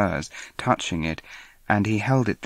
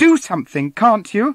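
shrill, very high, loud demanding yell; 12 semitones higher, 8 dB louder than usual. In a read-aloud story, Lady Turton calls on Basil, shouting. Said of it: "Lady Turton shouted".

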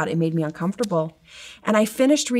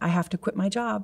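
sobbing, pleading tone, quieter; 5 dB quieter than usual. Retelling what was said to a teacher in his office: imitating own past sobbing. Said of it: "and I started sobbing".

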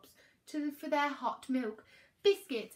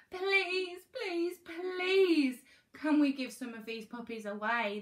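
pleading, begging tone; 3 semitones higher, 3 dB louder than usual. Peaches and her father confront Mum at night; Peaches pleads. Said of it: "the girl pleaded".

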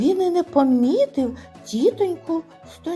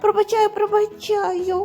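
frightened, much higher; 6 semitones higher than usual. Narrator reading a woman's reply to a crying man's apology, frightened. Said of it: "злякано сказала вона".

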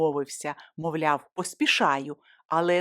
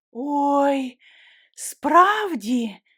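delighted, surprised, high, drawn-out exclamation; 7 semitones higher, 4 dB louder than usual. An old woman answers the narrator's offer to carry her bags, delighted. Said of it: "зраділа старенька".

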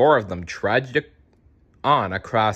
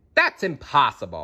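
usual speaking voice

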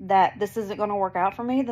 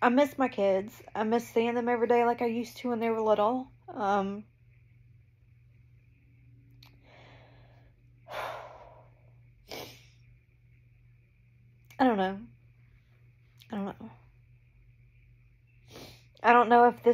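crying, tearful, much higher pitch; 2 semitones higher than usual. Talking about missing their kids, crying, emotional. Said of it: "I'm going to cry now".

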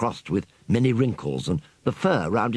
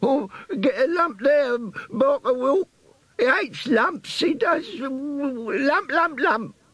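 sulky, whining, croaky, very high rat squeak. An old rat nursing his sore head answers his questioner, croaky old rat squeak. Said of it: "An old brown rat lay on the ground before him. His thin, chiseled face was crossed with many wrinkles, and the fur round his temples was grey. The rat was nursing his head and uttering indignant cries through gummy lips. ... squeaked a croaky voice as Piccadilly gave the tail a sharp yank".

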